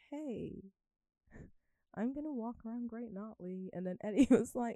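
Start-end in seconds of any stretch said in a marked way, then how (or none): 0.1-3.7 put-on American accent. Retelling what they once said to Eddie: American accent. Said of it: "talking with an American accent".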